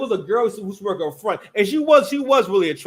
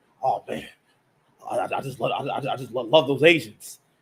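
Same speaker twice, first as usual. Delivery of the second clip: put-on hungry tone, lower and slower; 6 semitones lower, 4 dB quieter than usual. Speaker quotes his friend talking about a girl: mimicking a hungry tone. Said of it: "he sounded hungry, very hungry tone".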